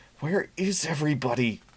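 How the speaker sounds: hissed through clenched teeth. Reading a bar worker's line, hassled by customers, hissed through clenched teeth. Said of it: "she hissed between clenched teeth".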